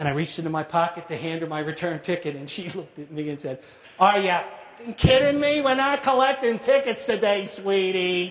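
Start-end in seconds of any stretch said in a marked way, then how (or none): 4.0-8.3 put-on New York accent, higher, louder, slower. Retelling what a woman said when handed a return ticket, in a New York accent. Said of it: "in her finest New York accent".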